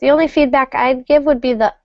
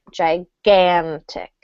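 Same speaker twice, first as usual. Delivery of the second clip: gigantic with stress pushed onto middle syllable gan; 6 semitones lower than usual. Coaching a learner's pronunciation: more stress on gan of gigantic. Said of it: "Add a little more stress on that second".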